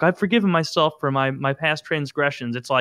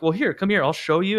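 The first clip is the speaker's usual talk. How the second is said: calm, easygoing, casual, offhand delivery; 4 semitones higher than usual. Retelling an interview clip, showing a string to the interviewer: imitating John Wayne Gacy, calm and casual. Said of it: "just casually".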